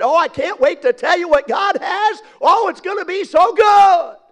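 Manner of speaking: acted preacher, high, loud, brimming with excitement. Picturing a preacher opening the Bible, act out his words with mock excitement. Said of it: "with great excitement".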